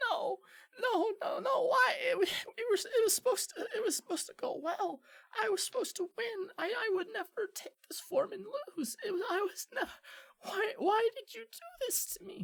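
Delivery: very high, tiny, squeaky little creature voice. Narrator voices a small creature talking to itself after losing, small squeaky creature voice. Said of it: "you hear this little voice saying to itself".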